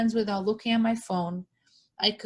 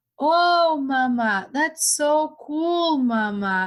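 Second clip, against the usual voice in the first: put-on very slow, high, drawn-out small-child voice; 6 semitones higher, 5 dB louder than usual. Retelling what a toddler son now says: imitating a toddler son. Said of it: "He comes to me and he's like".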